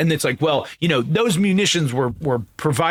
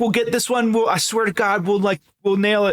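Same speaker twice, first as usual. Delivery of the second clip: fake tearful pleading voice, higher; 6 semitones higher than usual. Acting out a meme about one more war: mock crying as James Franco. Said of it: "James Franco where he's, like, crying".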